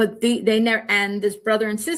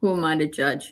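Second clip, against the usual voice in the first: muttered under breath, much lower pitch; 5 semitones lower than usual. Speaking about the transcript of her proceedings, muttered under her breath. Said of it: "saying kind of under her breath".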